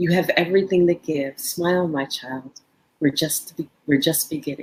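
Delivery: whispered words. Retelling what a woman whispered in their ear while holding their hand, whispering. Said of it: "she whispers in my ear".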